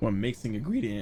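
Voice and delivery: cracking voice. Talking to chat while mixing an ingredient, voice cracking. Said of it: "that was a voice crack".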